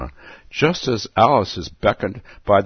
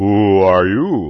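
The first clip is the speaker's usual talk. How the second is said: drowsy, lazy, languid, sleepy drawl; 5 dB louder than usual. Narrator reading the caterpillar addressing Alice, languid sleepy voice. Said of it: "addressed her in a languid, sleepy voice".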